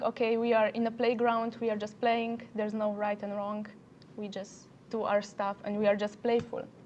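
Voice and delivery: ordinary talk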